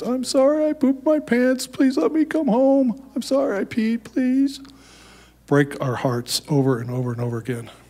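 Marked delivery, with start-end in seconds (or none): 0.0-4.6 very high, slow, drawn-out tearful pleading. Retelling the son's calls pleading to come home: imitating a son in tears. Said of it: "he would be in tears".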